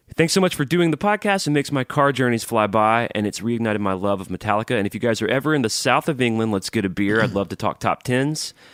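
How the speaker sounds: ordinary delivery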